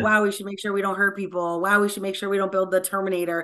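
plain

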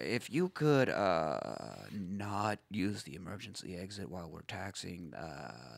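quiet, slow, low-pitched drone. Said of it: "do Lumberg while you do that".

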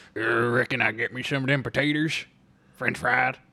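mock Southern country accent. Answering a question about the kitchen, doing a Sling Blade impression. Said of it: "It's Sling Blade".

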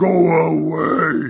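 put-on loud shout. Retelling how a man answered someone tapping his shoulder, retelling a loud shout. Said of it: "He just says real loud".

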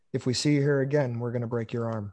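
low, deadpan, dead-serious, no smile. Retelling a security guard's threat, no smile: imitating a dead serious threat. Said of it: "he's dead serious".

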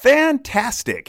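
top-of-the-lungs, very loud, high cheerful shout. Retelling answering a cashier's greeting: retelling a loud happy shout. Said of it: "at the top of my lungs".

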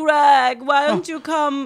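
put-on loud, slow, drawn-out, strange mixed European accent. Quoting a line the audiobook reader does in Tommy Wiseau's accent. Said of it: "he does it in Tommy's accent".

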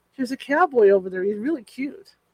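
usual speaking voice

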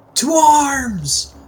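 very high, shrill, booming battle-cry yell. A player's character yells out a call to arms to the surrounded trading post. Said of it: "can I yell out two arms?".

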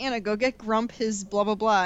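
ordinary delivery

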